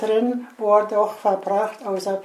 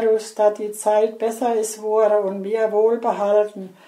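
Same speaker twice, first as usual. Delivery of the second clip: usual speaking voice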